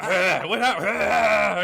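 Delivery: very slow, loud, high, strangled, drawn-out choking groan. Retelling having just choked on own words, imitating own choking. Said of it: "I just got, like".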